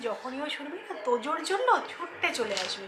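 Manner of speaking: soft hushed voice. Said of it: "আমি আস্তে আস্তে বলছি".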